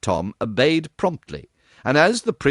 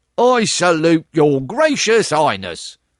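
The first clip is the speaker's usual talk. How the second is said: mocking, jeering, pitched-up sarcastic tone; 5 semitones higher, 4 dB louder than usual. A soldier answers the little prince who claims to be Prince of Wales, mocking. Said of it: "said mockingly".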